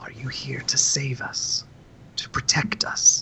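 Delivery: soft, very quiet, near-whispered voice. Voicing the priest by the altar asking the newcomers a question, in a very quiet voice. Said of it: "in a very quiet voice says".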